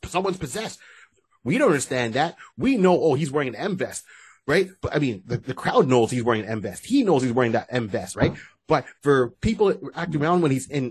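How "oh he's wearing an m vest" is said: usual speaking voice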